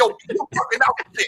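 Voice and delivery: New York accent, spoken fast, rattled off. Describing highway patrol officers and imagining a New Yorker among them, in a New York accent.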